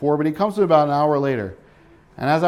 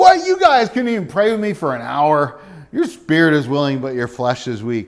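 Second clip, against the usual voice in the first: harsh, condemning barked voice. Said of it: "Do you hear him condemning, rebuking".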